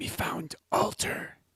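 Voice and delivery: hushed whisper, breath only, no voice. Voicing a character who tells a companion about a discovery: whispering in character. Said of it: "Almal looks back at Zatasha and whispers".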